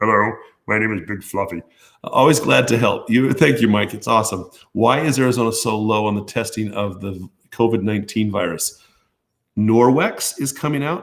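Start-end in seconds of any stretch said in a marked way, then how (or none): 0.0-3.3 playful puppet-like voice. Answering a listener's request to do it, in Big Fluffy puppet voice. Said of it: "with a puppet voice".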